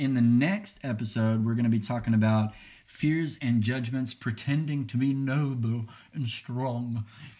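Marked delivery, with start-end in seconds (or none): 4.1-7.0 slow, drawn-out put-on English accent. Host previewing the next episode to listeners, in a put-on English accent. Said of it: "I went into an English accent".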